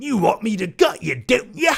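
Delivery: shoddy fake Australian accent. Speaker quoting a line from Wolf Creek: shitty Australian accent impression. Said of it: "that's my shitty Australian impression".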